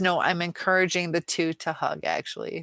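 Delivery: ordinary delivery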